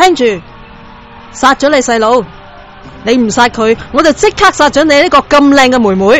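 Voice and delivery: loud, brutal, threatening soldier-like delivery.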